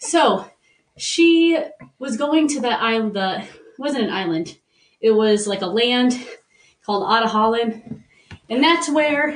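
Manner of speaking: breathless, winded, puffing between words. Explaining a movie's plot to someone who asked: winded. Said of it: "Sorry, I'm very winded".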